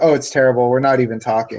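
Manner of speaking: imitated deadpan, straight-faced delivery. Retelling an answer given to a media question, retelling a deadpan answer. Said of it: "He deadpan straight faced".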